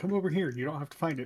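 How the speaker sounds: hushed voice. Calling the others over to a door in the dark: whispering. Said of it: "I will whisper to the others".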